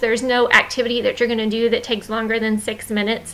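ordinary delivery

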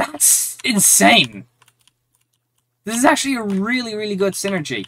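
breaking, cracking voice. While playing a game, the speaker finds a strong item setup; voice cracking. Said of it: "My voice is cracking!".

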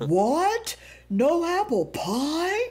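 hammed up, exaggerated, pitched high and swooping. Retelling Dad jumping out of his seat at a restaurant, in an exaggerated Big Bad Wolf voice. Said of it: "he sounded like the wolf in The Three Pigs".

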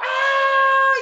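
high, loud yell with a belted "ah". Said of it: "that's a yell".

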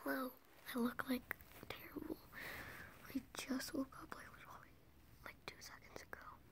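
hushed whisper. Greeting viewers right after waking up early, whispering. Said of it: "I'm whispering".

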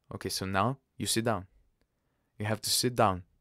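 ordinary delivery

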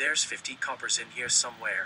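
ordinary delivery

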